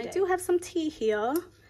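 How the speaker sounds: fake British accent. Moving on from the day's crystal to show some tea, bad british accent. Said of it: "Don't mind my British accent".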